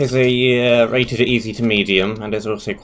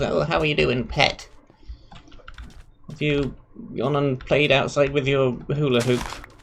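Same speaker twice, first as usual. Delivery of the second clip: put-on elderly grandmother voice; 4 semitones higher, 4 dB quieter than usual. Explaining why not to call the listener pet, speaker imitates an old granny: old granny voice. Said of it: "sound like an old granny who goes".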